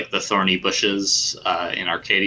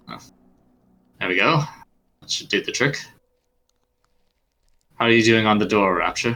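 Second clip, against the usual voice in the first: put-on light, understated British accent. Voicing the goateed man after a fight: light british accent. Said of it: "light British accent".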